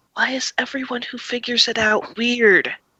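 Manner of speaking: speaking in a whisper. Voicing a character who leans over and whispers to another: whispering. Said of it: "he whispers".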